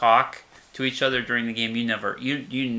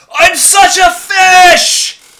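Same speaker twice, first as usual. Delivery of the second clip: very high, very loud, very slow booming howl; 18 dB louder than usual. Retelling a chess master's outburst in a silent hall: imitating someone yelling loudly. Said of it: "yelling at the top of his lungs".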